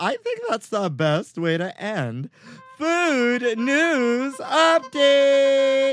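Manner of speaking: very high, drawn-out cartoon voice. Host closes the Food News Update segment, sounding like a Big Mouth girl. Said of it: "I just felt like I sounded like that girl, that character from Big Mouth".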